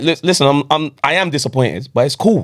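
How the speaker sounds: ordinary talk, nothing marked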